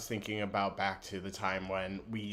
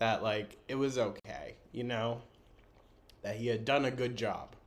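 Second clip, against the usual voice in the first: tearful, teary voice, close to crying; 2 semitones higher than usual. Remembering a last quiet moment with the dog, getting teary-eyed. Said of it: "I'm getting teary eyed".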